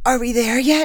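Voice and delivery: sleepy but excited. On a plane descending toward Honolulu, Dawn asks Wyatt, sleepy but excited. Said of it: "in a sleepy but excited voice".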